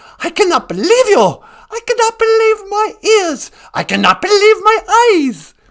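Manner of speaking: very high, shrill, loud character voice. Playing a caller to the show who is angry: Greta Thunberg voice. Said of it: "is that you, Greta?".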